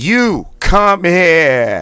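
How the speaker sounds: shrill, booming, very loud, high Boston accent, stretched. Leading a vocal warm-up exercise, saying the last rep in a Boston accent. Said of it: "It's going to be in a Boston accent".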